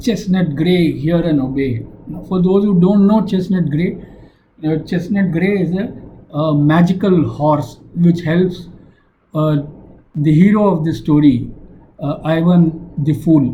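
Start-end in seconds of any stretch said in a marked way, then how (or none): none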